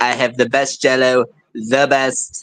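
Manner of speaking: very low, deep, bragging voice. Joking about having said something, in a Donald Trump voice. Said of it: "I have devolved into Trump".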